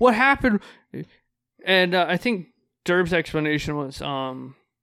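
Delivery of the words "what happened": acted, high, loud, frantic, alarmed, panicked outburst. Retelling how a secretary reacted to an injured hand: imitating someone panicking. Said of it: "just full panic mode".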